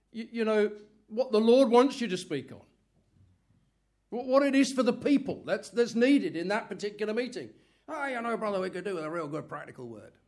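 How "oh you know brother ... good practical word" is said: put-on quick, soft Northern Irish accent, words run together. Quoting someone at a meeting asking the preacher for a word, northern irish accent. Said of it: "it's often with a Northern Ireland accent".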